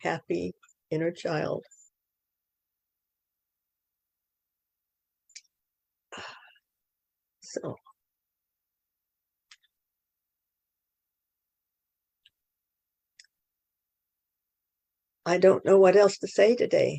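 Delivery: tearful, talking through tears, crying through words. Speaking to their inner child, the speaker says thanks: crying while talking. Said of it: "I'm doing a little crying right now".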